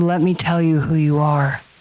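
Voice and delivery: put-on gentle whisper. Recounting what a loving voice whispered to the speaker, retelling a loving whisper. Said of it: "he whispered to me".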